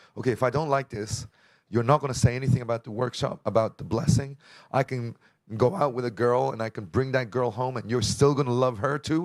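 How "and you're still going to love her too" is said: normal talking voice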